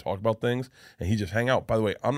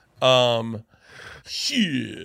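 usual speaking voice

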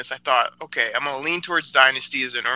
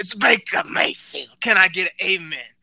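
pulpit-style preacher delivery; 6 semitones higher than usual. Announcing his pick Baker Mayfield the way a Baptist preacher would, Baptist preacher voice. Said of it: "how you would say if you were a Baptist preacher".

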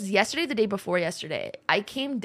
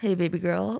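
forced, super-low put-on voice. Mocking people who force their voices super low, imitating a forced super-low voice. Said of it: "super low pitched".

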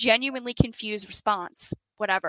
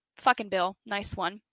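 ordinary talk

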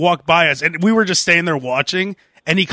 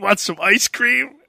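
mock teasing delivery; 2 semitones higher than usual. Retelling how a friend teased the speaker, in a mocking imitation of a friend. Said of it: "making fun of me".

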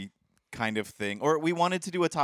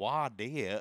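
put-on Southern accent, quieter; 2 semitones lower, 6 dB quieter than usual. Describing a funny part of a record to friends, in a put-on Southern accent. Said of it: "in their Southern accent".

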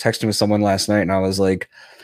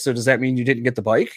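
ordinary talk

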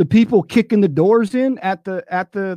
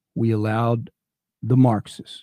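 very slow, deliberate, lower-pitched and quieter; 9 semitones lower, 4 dB quieter than usual. Making his point one last time, the speaker says this very slowly. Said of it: "let me say this very slowly".

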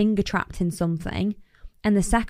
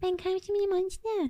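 jokey put-on baby voice, much higher, quieter; 11 semitones higher, 7 dB quieter than usual. Showing how people do a baby voice in earnest: jokey baby voice. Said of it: "but you're doing it jokey".

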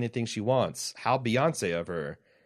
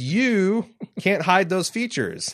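put-on, very proper, deliberate, high and slow delivery; 8 semitones higher, 6 dB louder than usual. Reading aloud a line from a listener's email: put-on proper delivery. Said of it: "That was said very proper".

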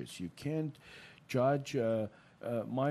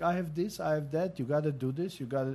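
put-on loud hollering, yelling rant; 4 semitones higher, 4 dB louder than usual. Retelling a patient who walks into the office: imitating a patient yelling. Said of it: "he's yelling".

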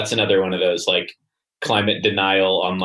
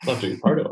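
high, half-whispered, voice barely on; 5 semitones higher, 3 dB quieter than usual. Quoting a remembered line from The Office: imitating a half whisper. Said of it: "he's kinda, like, half whispering when he's like".

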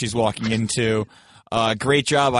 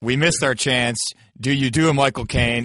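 normal talking voice

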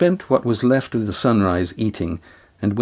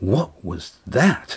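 words gasped out. Narrator reading a character's line right after a sudden shock, gasping. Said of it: "Lindy gasped".

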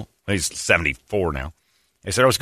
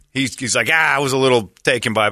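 ordinary talk, nothing marked

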